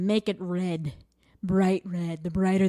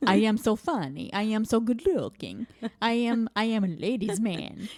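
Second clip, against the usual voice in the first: put-on vampire voice; 3 semitones higher than usual. Mocking a dad who thinks he is so funny: Count Chocula voice. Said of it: "You sound like Count Chocula".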